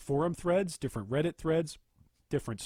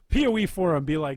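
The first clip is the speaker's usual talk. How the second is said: plain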